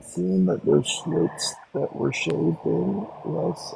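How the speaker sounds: hushed, breathy whisper under the breath. Answering a question during a group conversation, whispering. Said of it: "Why are you whispering now".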